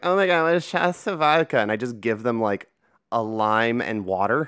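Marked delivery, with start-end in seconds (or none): 0.0-1.6 mock drunk woman's voice, slurred, pitched higher. Retelling what very drunk women said after a fake shot: imitating drunk women. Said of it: "women who are way too drunk, going like".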